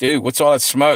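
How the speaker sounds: ordinary delivery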